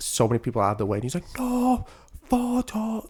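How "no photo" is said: play-acted very high, screamed broken English. Retelling how some guy pushed people away: imitating screaming in broken English. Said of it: "screaming in broken English".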